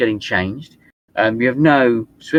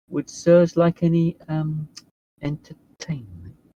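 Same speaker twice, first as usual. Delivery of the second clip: slow, high, discreet, hushed half-whisper; 5 semitones higher, 3 dB quieter than usual. Voicing an attendant offering the guests something: hushed half-whisper. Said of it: "in a kind of hushed whisper".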